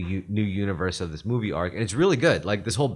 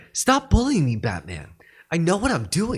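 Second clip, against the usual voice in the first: bratty, high, pitched-up, swooping, swinging delivery; 8 semitones higher, 3 dB louder than usual. Imitating Dick answering Batman: bratty Dick voice. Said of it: "Dick always sounds like a bitch".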